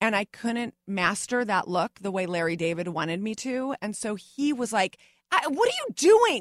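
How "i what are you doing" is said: loud, high-pitched yelling. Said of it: "yelling at me to do it again".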